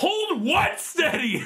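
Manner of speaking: play-acted, very high, shrill yell. Telling a story about a skid, the speaker acts out a man yelling back, retelling a yell. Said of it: "he literally yells back at him".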